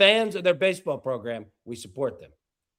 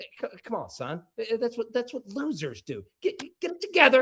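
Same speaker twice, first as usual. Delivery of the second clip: disappointed, reproachful, scolding tone, pitched up; 6 semitones higher than usual. Retelling a coach's remark about losers: imitating a disappointed dad. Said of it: "it's like a disappointed dad".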